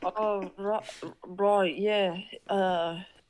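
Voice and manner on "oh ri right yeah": put-on British voice. Voicing a character in Max's British voice. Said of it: "it's perfect voice".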